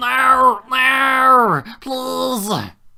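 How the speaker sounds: very high, very loud terrified shriek, not stretched. Voicing a distant captive heard from outside: terrified screech. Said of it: "screeching in maybe not pain, but, like, almost like terror".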